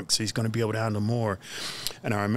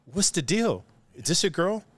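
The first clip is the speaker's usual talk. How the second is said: acted heated, angry, pitched-up delivery; 8 semitones higher than usual. Retelling a confrontation over a girl, imitating own angry words. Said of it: "I'm so angry, and I'm like".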